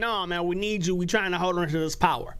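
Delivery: normal talking voice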